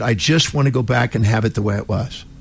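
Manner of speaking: plain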